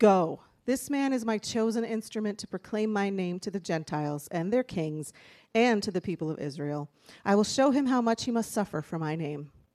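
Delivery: ordinary talk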